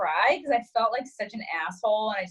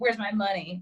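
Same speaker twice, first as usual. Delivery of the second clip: normal talking voice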